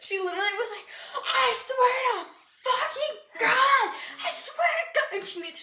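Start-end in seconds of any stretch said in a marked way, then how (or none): 1.2-5.2 very slow, loud, high, drawn-out sobbing wail. Retelling how she yelled at him on the phone, imitating someone screaming. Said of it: "I'm screaming at him like I'm crying".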